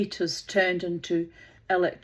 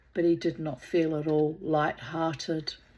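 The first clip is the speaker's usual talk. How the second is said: ordinary delivery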